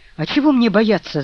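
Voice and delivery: ringing voice. Narrator reading the reply to the voice behind the door, voice ringing out. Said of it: "зазвенел голос".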